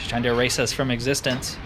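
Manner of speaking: ordinary talk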